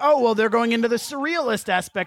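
ordinary talk

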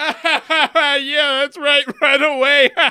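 high, loud, over-the-top forced laughing. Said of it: "I start over the top laughing".

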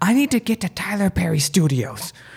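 mock, desperate, high, panicked scream. Retelling jumping into a cab and telling the driver: imitating own scream. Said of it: "and I scream".

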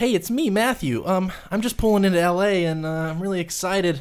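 very high, youthful, eager, excited voice. Retelling a voicemail left at twenty-two: imitating his younger self at twenty-two. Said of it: "I was twenty-two, so I sounded".

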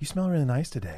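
soft, earnest, heartfelt, fully sincere. Retelling what Tanner said before the show, imitating Tanner, very genuinely. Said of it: "say very genuinely".

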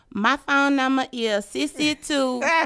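put-on Atlanta accent. Asked to say it again by someone who loves your accent, answer in an Atlanta accent. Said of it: "I love your accent. Say it again".

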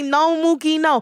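put-on Latin American accent. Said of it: "when I hang out with my Latinos".

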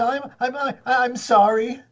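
mock very slow, high, crying child's stammer. Describing a scolded child made to apologize: imitating a crying child. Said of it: "crying and says".

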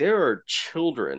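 usual speaking voice

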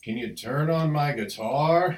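very loud, drawn-out, booming, haughty acted swagger. Retell a musician's request on stage before thousands of people, imitating a most arrogant voice. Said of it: "in the most like arrogant voice he heard".

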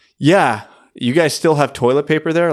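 acted, somewhat sarcastic jab. Retelling an american listener's reply to a toilet paper post, kind of sarcastic. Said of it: "kind of sarcastically".

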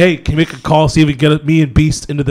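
ordinary delivery

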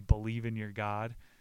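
ordinary talk, nothing marked

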